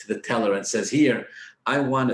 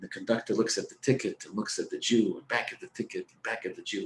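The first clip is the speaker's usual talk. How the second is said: normal talking voice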